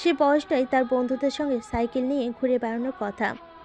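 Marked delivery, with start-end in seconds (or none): none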